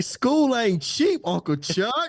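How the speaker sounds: very high, slow, drawn-out voice. Joking about what the niece would say to her uncle: imitating Olive. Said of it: "he like".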